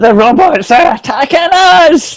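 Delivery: very high, very drawn-out, top-of-the-lungs shrieking scream. Playing Tony at the door, screaming at the top of his voice. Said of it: "screams at the top of his voice".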